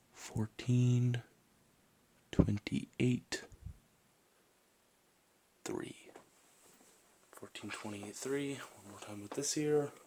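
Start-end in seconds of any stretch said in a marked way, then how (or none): 0.1-5.9 quiet, soft whisper close to the ear. Whispering numbers in each ear for a hearing check: whispering. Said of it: "I'm just gonna whisper a few words".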